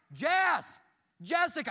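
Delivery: loud, high, frantic, panicked screaming. Speaker retells calling out for someone among strangers, screaming a name. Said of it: "And I start screaming".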